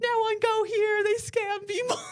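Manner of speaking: mock very high, furious angry yell. Retelling a meltdown in the store, imitating the man yelling as he left. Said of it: "he left the store yelling like".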